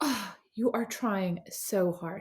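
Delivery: mock disdainful girlish voice. Act out an older girl turning around to you when you were about eight, imitating a girl's disdain. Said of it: "with such disdain and goes".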